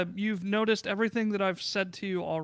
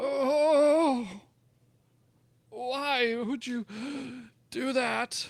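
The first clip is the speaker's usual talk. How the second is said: very slow, last-breath dying man's voice; 4 semitones higher than usual. Voicing a character hit at by a rock: sounding like he's dying. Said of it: "Why are you sounding like you're dying?".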